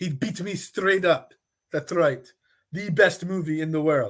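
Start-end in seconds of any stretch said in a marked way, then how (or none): 0.0-2.3 clumsy, overdone, bad put-on Russian accent. Discussing player contracts, the speaker says this in a bad Russian accent. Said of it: "My my my Russian accent is not very good".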